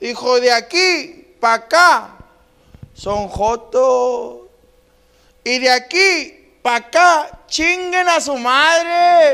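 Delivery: put-on, very slow, drawn-out, high, drunken bellowing. Telling a story about his drunk grandfather in a cantina, imitating drunk grandfather shouting. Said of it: "Una vez en la cantina bien pedo".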